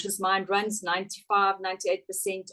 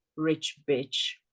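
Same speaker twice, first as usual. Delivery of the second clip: put-on muttered whisper under breath, lower; 4 semitones lower than usual. Retelling how the mother reacted to a well-dressed lady: imitating a whisper under breath. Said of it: "whispering under her breath".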